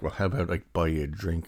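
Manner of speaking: normal talking voice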